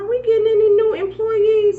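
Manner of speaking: high, loud, sweetly crafty voice.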